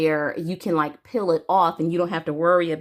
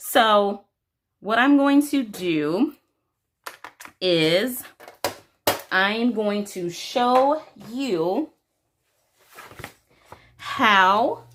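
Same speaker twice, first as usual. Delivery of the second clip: very slow, halting, broken-up phrasing; 4 semitones higher than usual. Watercolor pencil demo, speaker telling viewers what comes next, talking very slowly. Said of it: "why am I talking like that with only 2 syllables per second".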